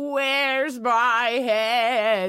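very loud, anguished, pained bellowing wail. Retelling what people hear from beneath a hidden cove, pained bellowing voice.

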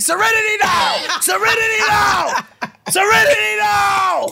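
very high, shrill shouted screaming. Joking about what they would have yelled at the passenger: mock screaming. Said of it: "I would've just started screaming".

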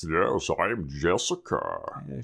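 weird, evil voice with swooping, swinging pitch. Recapping a show, voicing the character Jessica; Jessica's weird evil voice. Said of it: "She's talking in her weird, evil voice".

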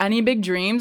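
normal talking voice

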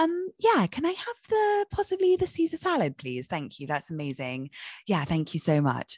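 mock-polite British speaker voice. Describing how Brits speak, imitating an apologetic Brit. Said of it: "Brits sandwich everything with an apology".

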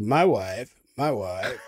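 low voice, every word slow and dragged out. Answering how the Dude sounds by imitating him: imitating the Dude's voice. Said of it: "how does the dude sound? The dude is like".

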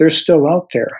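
quiet theatrical whisper. Speaker in a tent retelling a companion's warning, half-whispering. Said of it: "says in a whisper".

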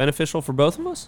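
words echoed with upward pitch lift on us. Repeating back the other person's last words, rise on 'us'. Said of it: "I just repeat the last couple things that she says in a upward inflection".

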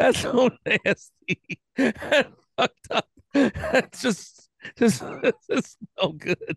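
speaking through laughter. After accidentally licking a grandmother's ashes off fingers, the speaker reacts laughing. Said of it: "I gotta stop laughing".

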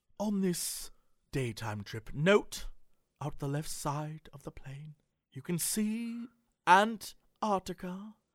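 soft, grandly theatrical put-on British accent. Retelling the pilot's announcements during the flight, imitating a theatrical British pilot. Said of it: "but he was this British guy".

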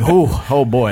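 normal talking voice

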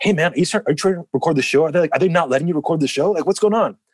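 very high, rushed, in-your-face excited babble. Retelling a guy who rushed up asking about recording: imitating someone super excited. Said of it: "super excited and, like, right in my face".

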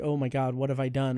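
plain

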